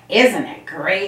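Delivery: loud, said through a laugh. Reading a story, a character bounces around friends in the snow: laughing. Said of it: "Laughed Tigger".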